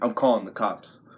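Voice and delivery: ordinary talk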